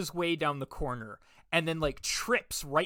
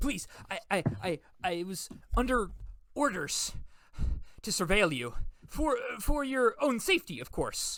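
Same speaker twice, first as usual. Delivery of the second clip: abject, groveling, faltering, stammering pleading tone; 4 semitones higher than usual. Voicing a man prostrate and bowing while explaining himself: groveling plea. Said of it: "prostrate before you and he starts bowing".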